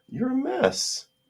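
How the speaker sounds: put-on very high, cooing baby talk.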